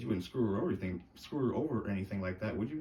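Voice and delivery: ordinary talk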